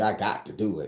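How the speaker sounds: ordinary talk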